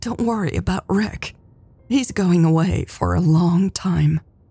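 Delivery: plain reading voice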